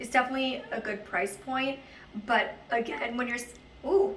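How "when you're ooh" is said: sudden voice crack on "ooh", breaking mid-phrase. Reviewing athletic wear for viewers, your voice cracks mid-sentence. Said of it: "voice crack".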